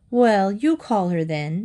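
plain reading voice

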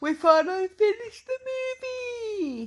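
very high voice talking through a drawn-out yawn. Wrapping up a recording after finally finishing the movie, talking through a yawn. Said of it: "if you're hiding a yawn in that".

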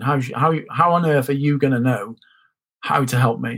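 ordinary delivery

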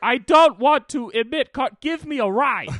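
acted, very high, very loud, drawn-out outraged rant. Acting out Greta asking you for a ride, imitating Greta really mad. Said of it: "She gets really fucking mad about it".

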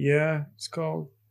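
put-on flat monotone voice. Retelling a scene on the ship between Anakin and Padme: monotone Anakin imitation. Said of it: "they're so monotone throughout".

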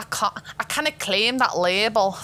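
attempted put-on Scottish accent. Chatting with others about claiming a label, in an attempted Scottish accent. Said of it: "That's my like attempt at a Scottish accent".

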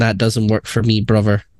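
plain

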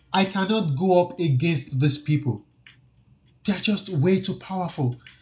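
plain

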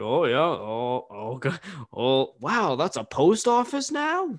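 slow, swooping, marveling middle-aged dad voice. Joking about driving through the hometown later in life: imitating a forty-year-old dad. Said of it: "forty-year-old dad driving through my hometown".

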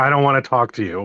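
ordinary talk, nothing marked

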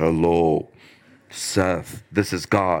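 very deep, very low, very slow drawn-out voice. Speaker acting out God speaking to him by name, in a deep God voice. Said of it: "God's going to appear to us in lightning and a deep voice".

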